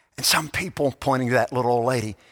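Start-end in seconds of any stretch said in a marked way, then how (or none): 0.2-0.9 whisper, quieter. Retelling a story where an old man speaks to a boy: imitating a whisper. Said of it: "he kind of whispered".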